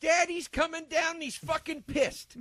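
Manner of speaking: very high, shrill yelling at full volume. Doing a favorite movie impression for the other speaker: Chris Penn impression. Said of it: "my favorite impression to do from Reservoir Dogs".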